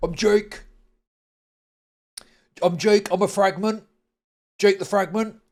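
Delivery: put-on mocking voice. Reacting to a woman in a video pretending to be Jake, mocking Jake imitation. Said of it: "To pretend to be Jake".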